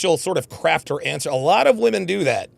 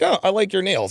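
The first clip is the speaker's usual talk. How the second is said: put-on vacant, ditzy, airheaded girl voice; 4 semitones higher than usual. Narrating a video of two girls, imitating the airheaded friend. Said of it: "her airheaded friend is like".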